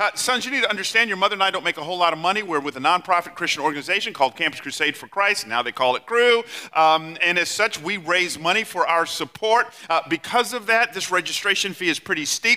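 ordinary talk, nothing marked

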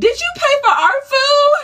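high, loud, panicked voice. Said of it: "Whitney said".

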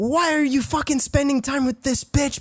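shrill, very high, furious screaming. Retelling how a friend started yelling at her boyfriend: imitating someone screaming. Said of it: "starts screaming at her boyfriend".

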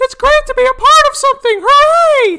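very high, loud falsetto. Showing the others a voice from The Owl House: Hooty voice. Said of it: "I can do the voice of Hooty from the Owl House".

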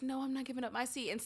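acted soft, quiet voice. Telling how a civil-rights protester did not refuse on the bus, acting out a quiet refusal. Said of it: "in a quiet voice".

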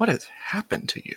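whispered, hushed, breathy mutter under the breath. Voicing a character inspecting someone frozen in place, muttering to himself. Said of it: "you just hear him muttering to himself".

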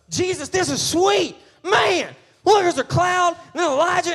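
put-on spoken in a country accent. Retelling what Peter says to Jesus, giving him a country accent. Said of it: "I just gave him a country accent".

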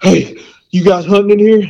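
put-on breathless old man calling out. Speaker retelling an old guy jogging up to them, acting out of breath. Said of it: "he's like out of breath".

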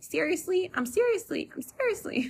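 very high, swooping, sing-song cartoon voice. Joking after a slip of the tongue: Cartman voice. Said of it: "I'm talking like Cartman from South Park now".

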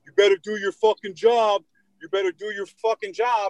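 mock furious, high, angry screaming. Retelling how an angry man yelled at him: imitating a man screaming. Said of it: "He starts screaming at me".

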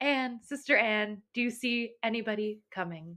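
very soft, hushed calling out. Reading the wife calling to her sister in the tower: crying out very softly. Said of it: "she cried out very softly".

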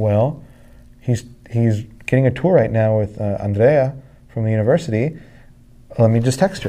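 ordinary talk

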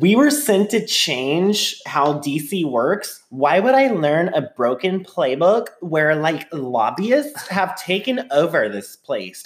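put-on Valley Girl accent. Quoting a congresswoman from a morning TV show: AOC in a Valley Girl accent. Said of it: "A O C in a Valley Girl accent was saying".

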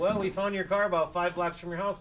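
ordinary talk

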